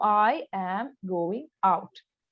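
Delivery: very slow, each word drawn out and separate. Showing how to practise reading aloud: very slow, word by word. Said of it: "it should be very slow".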